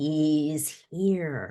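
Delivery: very sinister, menacing voice. Reading a story as the villain announces a new threat: most sinister voice. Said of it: "in her most sinister voice".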